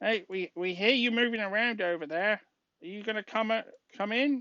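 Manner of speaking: tiny, little, high creature voice. The narrator voices someone calling out to the party, in a little voice. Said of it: "you hear a little voice".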